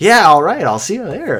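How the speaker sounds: sarcastic. Retelling his reply when invited to play the Waterbury Open, retelling a sarcastic reply. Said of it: "he goes like the most sarcastic".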